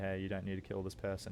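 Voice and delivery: ordinary talk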